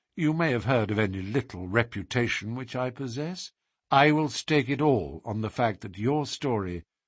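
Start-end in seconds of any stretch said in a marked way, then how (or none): none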